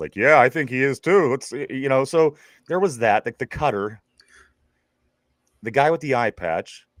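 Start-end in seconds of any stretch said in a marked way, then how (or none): 0.2-1.5 loud, raised voice. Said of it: "So I had to raise my voice a little bit".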